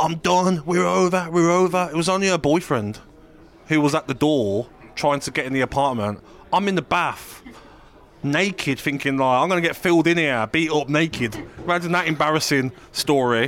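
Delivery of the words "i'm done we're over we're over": mild, moderate yell. Act out the boyfriend at the shut apartment door, imitating someone screaming through a door. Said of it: "He's screaming through the door saying".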